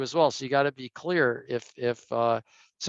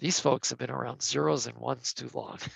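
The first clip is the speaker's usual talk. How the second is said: hushed stage whisper, under the breath; 2 semitones lower, 6 dB quieter than usual. Retelling what someone half-whispered while watching people debate: imitating a half-whisper. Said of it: "leans over to me and whispers".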